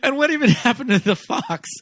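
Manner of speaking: high-pitched mock voice spoken through laughter. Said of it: "the one man goes".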